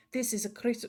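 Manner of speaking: put-on Russian accent, possibly unintended. Trying for an english accent but slipping into a russian accent. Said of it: "that's that's Russian again".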